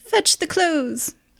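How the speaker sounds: put-on very high-pitched old butler voice. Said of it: "this, like, tall old man walks in".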